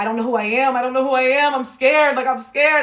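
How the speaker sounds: mock frightened, panicked, distraught, falling-apart outburst. Recalling a nervous breakdown after realizing depression: retelling panicked distress. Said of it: "I just had a nervous breakdown".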